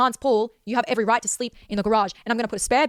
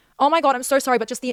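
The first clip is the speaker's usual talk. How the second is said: ordinary delivery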